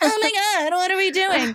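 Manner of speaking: play-acted frantic panic, very high-pitched. Retelling how latecomers react to the plan: imitating people freaking out. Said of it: "shaking it or standing up and be like".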